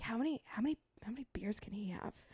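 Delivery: very soft, secretive, urgent, repeated whisper. Retelling what a friend whispered to avoid offending someone: imitating someone whispering. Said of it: "whispers to me".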